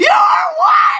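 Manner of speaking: high, loud, furious yell.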